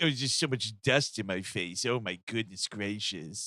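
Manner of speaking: low, grumbling complaining tone. Quoting a film character's line about dust: imitating Ben Pinkwater complaining. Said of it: "I do love him complaining about the dust".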